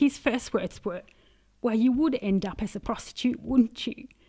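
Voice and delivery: choked-up voice, on the verge of crying. Recounting the first words someone said to them, choking up, about to cry. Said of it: "sorry, I'm going to cry".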